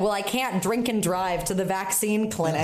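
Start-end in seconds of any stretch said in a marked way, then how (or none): none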